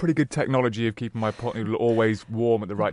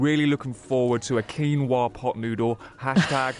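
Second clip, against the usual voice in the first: ordinary talk, nothing marked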